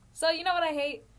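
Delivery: heated rant.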